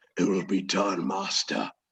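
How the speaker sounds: deep, low, growling beast voice. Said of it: "you can hear kind of a low growl voice".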